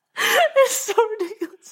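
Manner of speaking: very high voice, laughing through words, crying with laughter. Reacting to a strange photo: crying with laughter. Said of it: "I'm like crying laughing".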